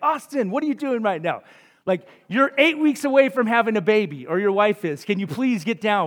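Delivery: acted-out yelling. A parent retells what they yelled at their oldest son, retelling a yell at son. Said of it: "I'm literally yelling at my oldest son".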